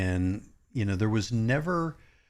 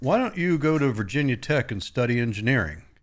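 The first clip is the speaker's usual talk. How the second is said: put-on radio announcer voice. Retelling dad's sudden question in the car: imitating dad's radio voice. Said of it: "He had a radio voice".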